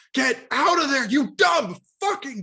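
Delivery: very high, shrill, loud screaming outburst. Recalling watching a horror movie with a sister, re-enacting a scream at the screen. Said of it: "I just screamed".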